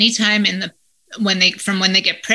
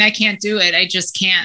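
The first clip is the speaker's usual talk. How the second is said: put-on crying, sobbing voice. Retelling phone calls to mom and boss from a parking lot: retelling own past crying.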